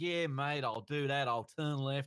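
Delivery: laid-back, chilled-out Australian sat-nav style accent. Explaining which voice they would pick for Alexa, the speaker does the TomTom Australian voice. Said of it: "You did a great accent just there".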